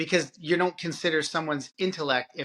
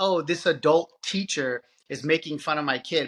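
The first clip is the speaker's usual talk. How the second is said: plain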